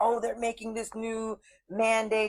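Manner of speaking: high, panicked, freaked-out tone. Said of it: "everybody's freaking out".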